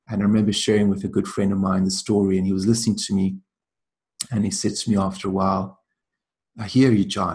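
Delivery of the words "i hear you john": put-on Irish accent, slower. Retelling a good friend's reply to a sad story, imitating his irish accent. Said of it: "in this beautiful Irish accent".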